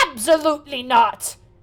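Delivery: very loud, shouting puppet voice. Voicing a puppet who refuses the party: puppet character shouting refusal. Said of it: "the puppet turned back and goes".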